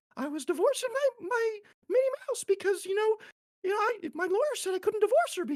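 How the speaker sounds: very high-pitched squeaky voice. After a Stitch voice, shifting into a Mickey Mouse voice. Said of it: "then you can be Mickey Mouse".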